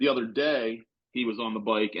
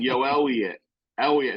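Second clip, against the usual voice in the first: poor, bad put-on Philadelphia accent; 4 dB louder than usual. Quoting a dude who calls a friend by name, in a bad Philly accent. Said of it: "has the bad Philly accent".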